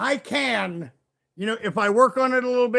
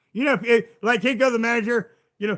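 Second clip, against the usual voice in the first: normal talking voice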